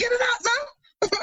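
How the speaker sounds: put-on very high, drawn-out, slow Jamaican accent. Speaker retelling what their dad said, imitating his Jamaican accent. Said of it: "in his Jamaican accent".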